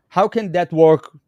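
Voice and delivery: normal talking voice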